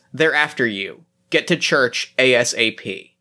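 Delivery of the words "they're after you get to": plain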